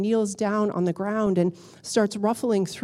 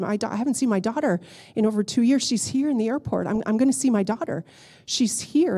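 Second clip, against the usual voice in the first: plain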